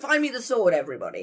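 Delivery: loud, high, blunt delivery.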